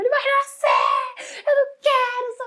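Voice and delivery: very high scream, pitch swinging wildly. Retelling being in labor stuck in traffic, retelling her own screaming. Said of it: "eu gritava no carro".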